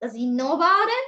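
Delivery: slow, low, plain voice rising on final "it". Teaching question intonation with an example, starting low and rising at the end. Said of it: "I start in a normal voice, slow, low one, and then I raise it at the end".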